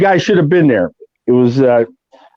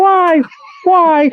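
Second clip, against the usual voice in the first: very high-pitched, squeaky voice. Joking after a stab to the groin, speaking in a Mickey Mouse voice. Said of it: "Now I talk like Mickey Mouse".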